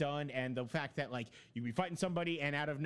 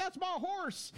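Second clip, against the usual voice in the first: high-pitched mock yell. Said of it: "you heard him yelling off".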